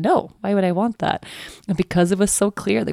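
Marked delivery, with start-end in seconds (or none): 0.0-1.2 put-on sassy voice. Retelling a kid's clear refusal: imitating a sassy reply. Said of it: "really sassy".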